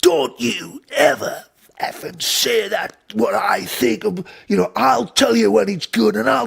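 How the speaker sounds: mock angry screaming. Recounting being screamed at in his face after a take, retelling an angry scream. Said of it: "he's screaming at me".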